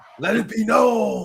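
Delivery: loud, very slow, drawn-out growling voice. Closing a debate with the others: growling Batman voice. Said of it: "I think my Batman voice is pretty good".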